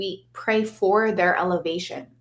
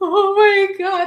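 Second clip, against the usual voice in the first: choked up, near tears, very high-pitched; 13 semitones higher, 7 dB louder than usual. Retelling filming a concert tribute, shaking: retelling trying not to cry. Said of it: "trying not to cry".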